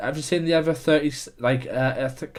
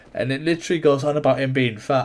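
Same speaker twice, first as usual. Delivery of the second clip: normal talking voice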